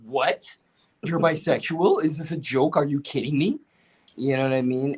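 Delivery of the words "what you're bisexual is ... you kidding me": put-on hurt, betrayed tone. Retelling a friend's reaction to learning about being bi: imitating a betrayed tone. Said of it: "this tone in his voice that made it sound like I betrayed him".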